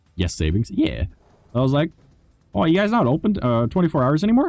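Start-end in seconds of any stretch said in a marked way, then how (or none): 2.5-4.5 put-on natural Northern Ontario accent, pitched up. Retelling a talk with a store worker: imitating own Northern Ontario accent. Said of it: "my natural accent, so he knew I was Canadian".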